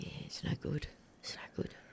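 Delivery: low, hushed near whisper. Friends ask for the impression, so do him: imitating Gaz's lowered voice. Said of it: "he lowers his voice".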